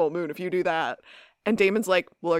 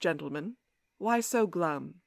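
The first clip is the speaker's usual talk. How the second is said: put-on soft, smooth, velvety voice with British accent; 6 dB quieter than usual. Retelling a bar scene where Klaus speaks to dejected Damon and Alaric, velvety British voice as Klaus. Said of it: "a velvety British voice says".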